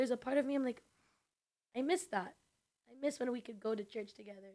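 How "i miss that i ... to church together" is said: emotional, choked up, voice close to crying. Telling another speaker about friends who left the faith: emotional, near tears. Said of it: "Izzy gets very emotional".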